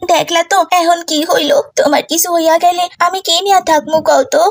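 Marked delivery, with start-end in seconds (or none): none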